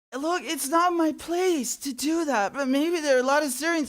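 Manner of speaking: mock-sympathetic voice. Reacting to a man speaking about Syria, mimicking his fake sympathy voice. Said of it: "that fake sympathy voice he's trying to do".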